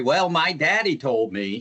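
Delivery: put-on Texas accent. Describing his co-teacher telling her story, imitating Robin's Texas accent. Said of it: "her Texas accent will kick in".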